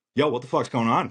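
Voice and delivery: put-on, snippy, confrontational delivery with attitude. Retelling a planned phone call: imitating a call with attitude. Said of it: "a little attitude about it".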